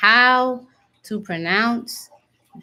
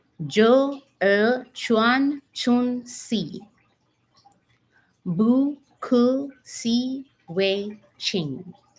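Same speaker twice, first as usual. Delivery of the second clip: each syllable deliberately spelled out, very slow; 3 semitones higher than usual. Teaching how to pronounce mantra lines, very slow pronunciation. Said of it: "I'm going to say them very slowly".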